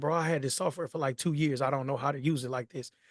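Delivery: plain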